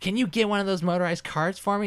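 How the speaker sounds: very high, snooty, annoying, condescending voice. Retelling a customer's request: imitating an annoying condescending voice. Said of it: "annoying, condescending voice".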